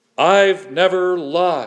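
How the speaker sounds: forceful, confident, emphatic delivery. Acting out someone insisting they have never lied, in a strong, emphatic tone. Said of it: "using a strong tone of voice and emphatic body language".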